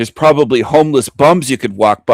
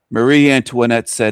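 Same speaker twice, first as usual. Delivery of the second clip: ordinary talk, nothing marked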